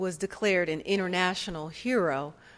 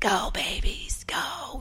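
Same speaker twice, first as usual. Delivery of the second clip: breathy, sick-sounding, whispered cheering; 5 semitones higher than usual. Retelling cheering at the TV while sick with bronchitis: Godfather voice. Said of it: "I sounded like the Godfather's twin sister".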